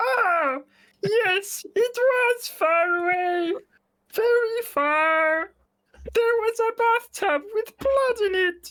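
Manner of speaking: strained throat, very high. Voicing a character answering that the restroom was far away: strained-throat character voice. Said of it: "It sounds like your throat is strained".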